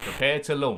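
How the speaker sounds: normal talking voice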